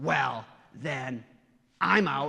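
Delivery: loud, drawn-out stage whisper. Retelling how a kid in church reacted to the bread, quoting him in a louder stage whisper. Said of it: "In a louder stage whisper".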